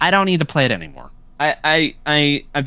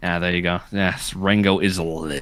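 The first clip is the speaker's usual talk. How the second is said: very low, deep retching, close to vomiting; 9 semitones lower than usual. Agreeing in a chat that Rango is legendary, sounding about to throw up. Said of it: "Why did that sound like you were about to throw up?".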